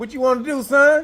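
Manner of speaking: very high, loud, tough street-style taunting voice.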